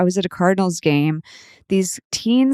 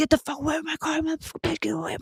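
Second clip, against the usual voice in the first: put-on screaming, higher pitch; 10 semitones higher, 8 dB quieter than usual. Retelling how strangers screamed at her by their car: imitating people screaming. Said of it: "they were screaming at me".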